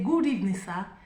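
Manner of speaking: ordinary delivery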